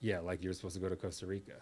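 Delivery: put-on muttering under breath. Retelling a wife's remark in the kitchen, imitating muttering under breath. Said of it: "she said under her breath like".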